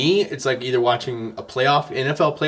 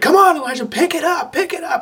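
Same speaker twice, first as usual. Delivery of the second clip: acted-out shrill yelling, very high pitched. Retelling watching elijah on a phone at lunch, retelling screaming at the phone. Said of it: "I'm screaming at the phone".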